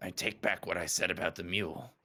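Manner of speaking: muttered under the breath. Tabletop player voicing Magnus after another character's kindness, muttered under breath. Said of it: "Magnus says under his breath".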